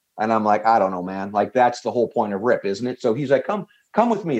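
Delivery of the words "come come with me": put-on Southern drawl, much higher pitch. Retelling what a man said to the speaker, in a Southern drawl. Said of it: "that Southern brawl accent".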